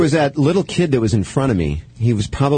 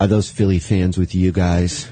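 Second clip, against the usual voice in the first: put-on low, deep-voiced little kid voice. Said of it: "he was that deep of a voice".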